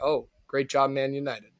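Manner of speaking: sarcastic, fake sincerity. Congratulating manchester united at the start of the podcast: sarcastic. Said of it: "it's sarcastic".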